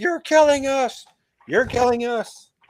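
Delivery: mock yelling pitched very high. Retelling a story scene where a character yells at Rand: imitating someone yelling. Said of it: "Bashir is yelling at him, like".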